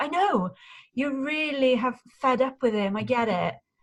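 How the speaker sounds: voice and tone pushed up. Demonstrating how not to address someone angry with their brother: raised voice and tone. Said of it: "we are kind of raising our voice and tone to go".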